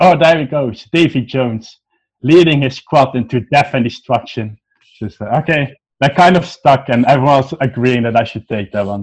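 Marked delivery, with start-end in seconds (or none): 0.0-4.6 mock, pitched-up heckling shout. Retelling what a guy shouted from the back of the group: imitating someone shouting. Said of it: "was shouting".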